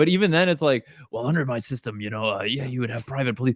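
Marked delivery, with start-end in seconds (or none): 1.1-3.6 put-on soft whispery near-whisper. Imitating a debater who never raises his voice: imitating someone's whispery voice. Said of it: "it always sounds like he's whispering".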